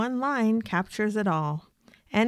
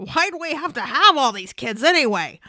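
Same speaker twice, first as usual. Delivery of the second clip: high-pitched, frazzled, at-wit's-end shouting outburst; 6 semitones higher, 6 dB louder than usual. In a frazzled moment at home, a spouse shouts to the other in best George Bailey voice. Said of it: "shout in our best George Bailey voice".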